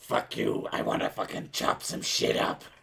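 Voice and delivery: rough, creaky, raspy game-character voice. Explaining how she slips into the Aru voice, the speaker does it: Aru voice. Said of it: "every time I start talking like her".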